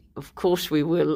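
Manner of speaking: put-on speaking through gritted teeth. Recalling standing by in the camera department, retelling a reply through gritted teeth. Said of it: "through gritted teeth".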